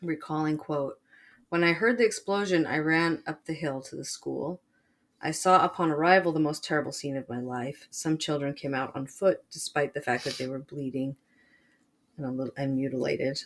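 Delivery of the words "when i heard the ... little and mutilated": ordinary talk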